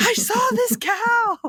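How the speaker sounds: mock scream, very high, very slow, drawn out. Retelling calling a husband about seeing a cow born: imitating someone screaming. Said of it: "screamed at him for, like, three minutes".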